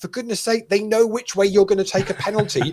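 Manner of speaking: mock shouting. Retelling shouting at the TV during a penalty shootout: imitating own shouting. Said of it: "I was shouting at the T V".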